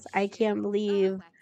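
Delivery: mock, put-on angry outburst. Retelling a game character's upset reaction: imitating an angry outburst. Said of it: "he is so angry".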